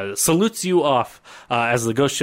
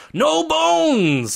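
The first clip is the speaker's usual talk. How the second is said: acted-out shout, pitched much higher; 3 dB louder than usual. Retelling how a man signals to the men on the boats, retelling a shout. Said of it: "he shouts up to them".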